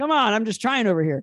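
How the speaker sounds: high, loud, flustered backpedaling protest.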